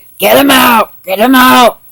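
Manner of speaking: badly done, put-on heavy-smoker voice. Imitating Trump at his rallies: Trump in a bad smoker's voice. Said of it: "a bad smoker's voice".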